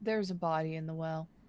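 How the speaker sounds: hushed whisper. Telling friends in character that a body is in the well: whispering. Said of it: "whisper to my friends".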